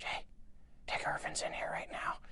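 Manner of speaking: very quiet, breathy, barely voiced whisper. Retelling how the speaker's mom phoned from the ACTRA office: retelling a whisper. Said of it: "she called me whispering".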